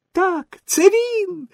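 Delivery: very high, little squeaky squealing cry. Signora Rosaura, a puppet, pokes her head out from backstage: squealing. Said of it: "вискнула сіньора Розаура".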